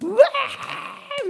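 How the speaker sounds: long, high, slow groan like a comedy crowd. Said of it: "スタンドアップコメディのあの、オーディエンスみたいな".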